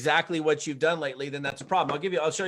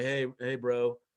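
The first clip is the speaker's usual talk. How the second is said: put-on depressed, downcast voice; 4 semitones lower, 4 dB quieter than usual. Retelling a phone call from a longtime acquaintance, imitating a depressed voice. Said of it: "he calls me up with this really kind of depressed voice".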